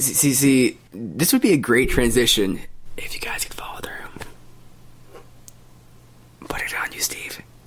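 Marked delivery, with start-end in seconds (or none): 3.0-7.4 hushed, dramatic stage whisper. On a podcast, a speaker urges the others to do impressions of one another, whispering. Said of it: "You're whispering all of a sudden".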